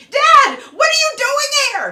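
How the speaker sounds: ear-splitting, shrill, high shriek at full volume. Retelling a daughter yelling at her dad in front of her friends; imitating a screaming daughter. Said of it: "She starts screaming at him".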